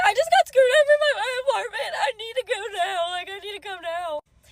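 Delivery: put-on, high, tearful bawling plea. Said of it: "I'm bawling my eyes out crying".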